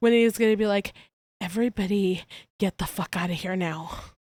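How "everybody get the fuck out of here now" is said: low, hushed, kept-down voice. Acting out Winnie shaking and ordering everyone out, Winnie's low hushed voice. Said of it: "in a low hushed voice".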